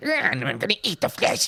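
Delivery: high, creepy little rat-creature voice. Describing rat creatures heard echoing down hallways, in a creepy little rat-creature voice. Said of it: "you'll hear their little fucking voices".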